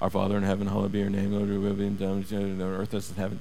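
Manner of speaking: soft, monotone, heartless mumble by rote. Imitating churches repeating the same prayer by rote: imitating a fast rote mumble. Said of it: "There's no heart to it. It's just, ... It's like they just repeat and mumble it".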